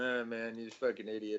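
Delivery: plain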